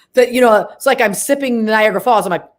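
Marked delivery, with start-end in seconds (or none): none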